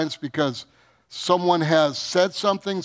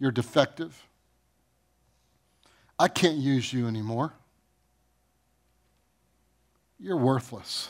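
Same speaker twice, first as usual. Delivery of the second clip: put-on tempter's whisper, lower and quieter; 4 semitones lower, 5 dB quieter than usual. Acting out what the enemy says in hardships: acted whisper as the devil. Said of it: "He whispers to you, the enemy".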